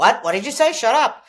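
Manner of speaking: big, loud voice, very high shout. Retelling an inner dialogue, the speaker voices the usual inner voice: big loud voice. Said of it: "the big loud voice that we all".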